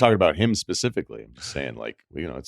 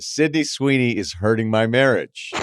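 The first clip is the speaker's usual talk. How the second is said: plain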